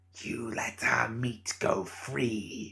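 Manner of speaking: hissed, menacing voice. Narrator reads an acolyte's line to Cornelius while she holds the girl, hissing. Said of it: "she hissed".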